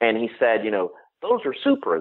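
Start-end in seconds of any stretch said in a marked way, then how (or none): 1.2-2.0 put-on child's very high, thick, heavy country drawl. Retelling what a boy said about the speaker's shoes, heavy country drawl. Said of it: "sort of country drawl".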